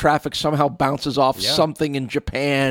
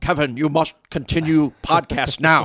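put-on badly dubbed old-movie voice. Speaker doing a bit about out-of-sync old movies, Godzilla character impersonation. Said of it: "That was my Godzilla character impersonation".

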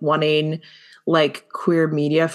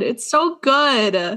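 choked up, high, drawn-out, on the edge of crying; 7 semitones higher than usual. Praising a show while starting to cry again: choked up, near tears. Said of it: "I'm gonna start crying again".

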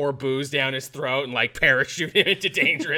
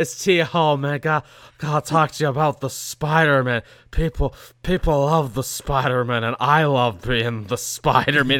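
louder put-on drunk actor voice; 4 dB louder than usual. Acting out a drunk call to Sony: imitating a drunk Tom Holland. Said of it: "He doesn't drunk dial".

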